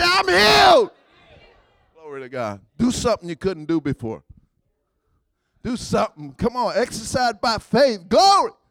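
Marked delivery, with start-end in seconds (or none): 0.0-0.9 very high, full-out shouted voice. Leading the listeners in declaring they are healed, shouting. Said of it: "Shout it again".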